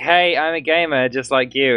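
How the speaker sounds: normal talking voice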